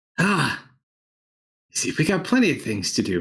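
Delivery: put-on older dwarven character voice. Narrating a scene, voice the newcomer Nobel in an older dwarven voice. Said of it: "this older um, dwarven voice".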